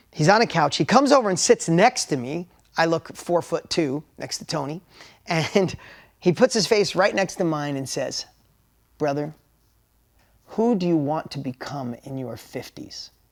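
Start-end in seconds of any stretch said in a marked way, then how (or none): 9.0-13.1 put-on pressing, intense, dead-serious delivery. Retelling what a man said with his face right next to his, imitating intense delivery. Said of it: "With the most intensity I've ever heard".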